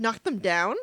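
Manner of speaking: imitated irritated voice. Recalling a favorite moment of the other speaker: imitating someone's irritated tone. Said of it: "the irritation".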